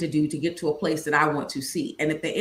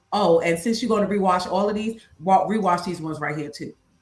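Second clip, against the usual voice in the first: ordinary talk, nothing marked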